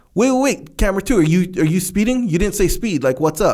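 loud call across a distance.

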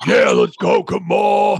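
booming macho voice, slow, swaggering and drawn out. Retelling how a friend showed his old character's talk, in Bonebreaker's macho voice. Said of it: "fucking macho man, gonna fucking kill you kind of shit".

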